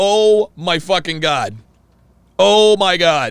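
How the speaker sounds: put-on exasperated disbelief. Describing a picture of Myron: imitating Myron's exasperated disbelief. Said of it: "showed any sign of frustration or disbelief".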